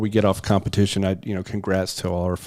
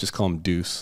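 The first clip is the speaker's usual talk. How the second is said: ordinary delivery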